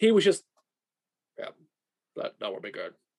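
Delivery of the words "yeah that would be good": mock deadpan, much lower and quieter. Recalling a camera guy's reaction to a shot: imitating a deadpan camera guy. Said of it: "more deadpan".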